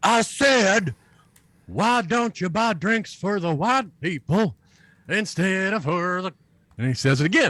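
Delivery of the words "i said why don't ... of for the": high, hollering, heckling yell. Retelling how a man stood on his chair and said it again: retelling a heckler's yell. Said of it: "And so he yells".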